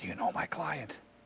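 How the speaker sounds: barely audible, hushed theatrical stage whisper. Retelling questioning the last witness before the jury: retelling a stage whisper. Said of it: "in a stage whisper".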